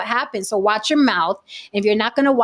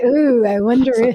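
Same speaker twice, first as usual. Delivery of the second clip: put-on dreamy, daydreaming voice, louder; 2 semitones higher, 4 dB louder than usual. Imitating someone imagining Salma Hayek: imitating Saint. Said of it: "He was like".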